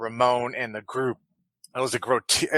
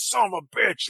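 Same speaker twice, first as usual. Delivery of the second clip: put-on screaming in a gravelly older man voice; 8 semitones higher than usual. Voicing a character screaming in pain: gravelly older man voice. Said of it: "in his, like, gravelly older man voice".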